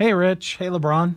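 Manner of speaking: flat, unexcited, low-energy voice. Saying a requested greeting line: flat, unexcited. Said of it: "It didn't sound like you're excited".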